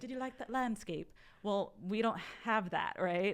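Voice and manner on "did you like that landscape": fake, put-on British twang, pitched up. Demonstrating the speaker's British accent with a modified example question, put-on British accent. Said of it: "That's my British accent".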